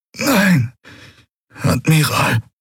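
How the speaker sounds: pained strained groan. Asked by the Admiral whether he is all right, Quailur answers, groaning. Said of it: "ächzte Quailur".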